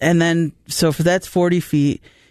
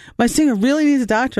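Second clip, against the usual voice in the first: really worked-up, upset, pitched-up insistence; 8 semitones higher than usual. Retelling what a man said when he came back, imitating him really upset. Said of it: "he got really upset".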